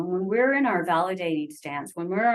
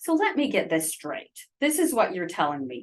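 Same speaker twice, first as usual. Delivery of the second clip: snide, mocking sarcasm with swooping tone. Showing a non-validating way of reflecting back: sarcastic tone. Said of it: "we can use a bit of a sarcastic tone of voice".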